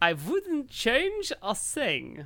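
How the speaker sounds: drawn-out voice with swooping pitch. Reading a pickup line aloud as instructed: Albert Einstein voice. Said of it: "In your best Albert Einstein voice".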